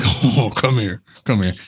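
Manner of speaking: hulking, big brute voice, coaxing. Voicing a beefy Goliath of a man calling a cat: beefy brute coaxing a cat. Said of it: "He's like".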